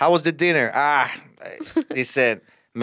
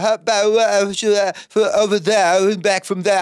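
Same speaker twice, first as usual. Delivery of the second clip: high, slow, halting mumble of swallowed syllables; 8 semitones higher, 3 dB louder than usual. Mocking how english people mumble their words: imitating mumbled english speech. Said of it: "They say".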